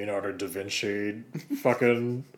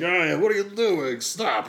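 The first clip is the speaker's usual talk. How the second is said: shouting, higher and louder; 9 semitones higher, 5 dB louder than usual. Acting out people yelling at a parkour runner: bystanders yelling. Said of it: "yelling at the parkour person".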